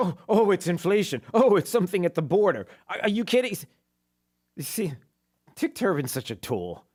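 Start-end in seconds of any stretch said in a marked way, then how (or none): 0.0-2.7 mocking imitation, mocking tone. Complaining about people who want something else to blame, mimic their excuses mockingly.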